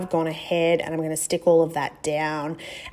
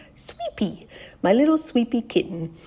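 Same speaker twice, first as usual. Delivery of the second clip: put-on cutesy, high, sing-song baby-talk voice; 6 semitones higher than usual. Speaker titles a layout in the voice used for their animals, cutesy baby voice. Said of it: "in my baby voice".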